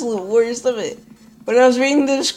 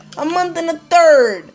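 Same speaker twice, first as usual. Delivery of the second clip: angry, cracking, pitched-up, breaking voice; 5 semitones higher, 4 dB louder than usual. Speaker repeats a phrase while ranting, so mad the voice is cracking. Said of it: "I'm so mad my voice is cracking".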